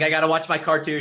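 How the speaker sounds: eager dad voice. Retelling dad's nightly eagerness to watch: imitating eager dad. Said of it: "he's like".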